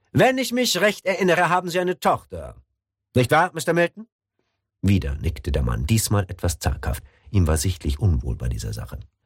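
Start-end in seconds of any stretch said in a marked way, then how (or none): 0.1-4.0 harsh interrogating voice, very high. The CIA chief presses a nervous man with questions; harder, interrogating tone. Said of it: "Seine Tonlage wurde härter, wie bei einem Verhör".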